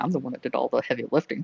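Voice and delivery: hushed half-whisper muttered under the breath. Playing a character who grumbles about doing the heavy lifting: half-whispering under breath. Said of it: "whisper under, under his breath".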